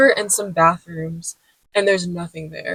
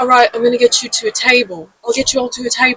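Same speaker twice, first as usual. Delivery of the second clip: put-on British accent, faster; 4 semitones higher than usual. Retelling what a man said to the speaker's group, in a put-on British accent. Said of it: "He had a British accent".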